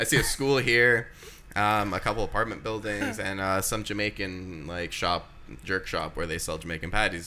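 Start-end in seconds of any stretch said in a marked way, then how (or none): none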